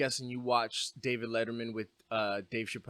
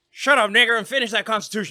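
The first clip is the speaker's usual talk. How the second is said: very loud, hard, high-pitched yell; 9 semitones higher, 11 dB louder than usual. Retelling a joke from a show: George Washington impression. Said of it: "This is my impression of George Washington".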